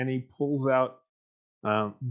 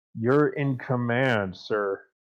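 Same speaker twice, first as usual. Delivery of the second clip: gritted-teeth words forced out through clenched teeth. Kneeling soldier answers his commander, through clenched teeth. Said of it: "says through clenched teeth".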